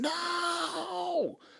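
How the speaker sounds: acted, shrill, piercing, very high loud scream. Retelling how a girl screamed as police ran up: imitating a loud scream. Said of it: "Like that".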